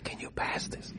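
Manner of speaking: breathy, barely voiced, very quiet hushed whisper. Recalling requests at Shabbos meals, the speaker reenacts one, whispering. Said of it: "I'm just whispering".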